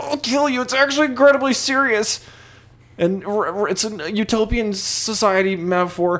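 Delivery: very high, squeaky, deeply offended nerdy voice. Mocking how fans react when trolled: Star Trek fan impression. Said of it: "that was a good impression".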